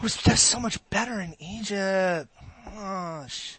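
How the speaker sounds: put-on very soft, hushed teenage grumble, drawn-out "gosh". Telling a story to an audience, doing a teenager impression. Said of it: "I'm trying to do my best teenager impression".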